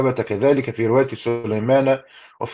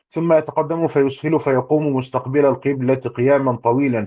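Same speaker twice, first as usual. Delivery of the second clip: plain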